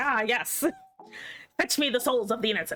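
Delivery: put-on tornado character voice. Joking about tornadoes, acting out an F4 tornado: voicing an F4 tornado. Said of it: "a fucking F four tornado just being like".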